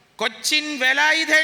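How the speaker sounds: slow, loud, high calling-out voice.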